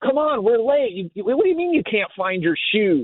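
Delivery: mock harried, high, stumbling, hurried yelling. A parent recalls their daughter's first kindergarten morning; retelling own past yelling. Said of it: "And I'm yelling".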